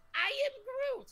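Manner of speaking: tiny little voice, very high. Hosting a show, introducing the special guest, who answers in a tiny Groot voice. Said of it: "I heard a little tiny voice".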